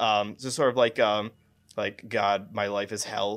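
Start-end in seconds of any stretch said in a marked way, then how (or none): 2.1-3.4 mock deadpan delivery, lower pitched. Imitating how the lead character of a show speaks: imitating a deadpan voice. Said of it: "speak in a very deadpan voice".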